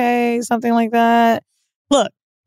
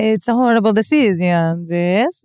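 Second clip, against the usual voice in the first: slow, put-on Italian-accented English; 2 semitones lower than usual. Answering a request to say the show's name in Italian: Italian accent. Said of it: "How would you say horrible decisions in Italian?".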